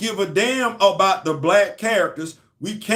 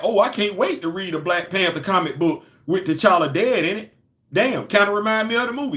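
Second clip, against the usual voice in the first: ordinary delivery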